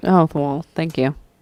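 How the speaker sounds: sarcastic voice. Answering a teasing remark from the other speaker: sarcastic thank you. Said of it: "What a sarcastic thank you that was".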